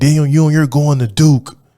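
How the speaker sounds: play-acted, full-throated scream at top of lungs. Retelling a coach banging on the door: imitating Yuri screaming at the top of his lungs. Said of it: "screaming at the top of his lungs".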